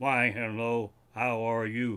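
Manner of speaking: flat, slow, even, robotic monotone drone. Retelling greeting a granddaughter through a voice app: Stephen Hawking voice. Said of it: "the Stephen Hawking voice app".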